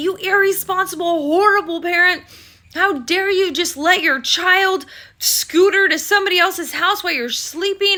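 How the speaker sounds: mock cop voice, high-pitched berating yell. Recounting waking up to trouble over their daughter, the speaker is imitating a cop yelling. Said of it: "And the cop yells at me".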